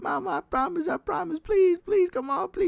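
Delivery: mock very high, weeping, begging voice. Speaker retells begging his mama for forgiveness: imitating himself crying. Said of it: "I was just there crying like".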